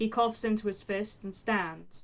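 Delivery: plain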